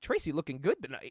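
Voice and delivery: quiet aside, half to himself, under the breath. Retelling what Don West said during the match, muttering under his breath. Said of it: "under his breath, goes, quote".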